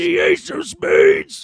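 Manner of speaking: very high, very slow, loud bellowed shout. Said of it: "that's his on-command, uh, impression".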